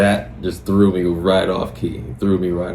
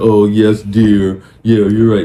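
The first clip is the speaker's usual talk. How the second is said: loud, yes-man agreeing tone, going along eagerly; 3 semitones higher, 8 dB louder than usual. Giving relationship advice, acting out a partner who agrees: imitating a yes man. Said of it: "don't be someone's yes man. Be like".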